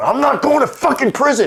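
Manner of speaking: very high-pitched, shrill screaming. Retelling a phone call with his free attorney, retelling screaming at the phone. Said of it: "And I'm like screaming at the phone".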